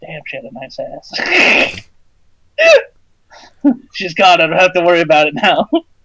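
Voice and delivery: quiet muttering under the breath. Voicing Sam after she leaves: Sam muttering under his breath. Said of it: "under his breath".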